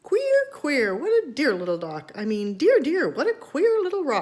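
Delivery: tiny, high, funny little mouse voice. Reading a story aloud, voicing a mouse the father hears: funny little mouse voice. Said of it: "a funny little voice say".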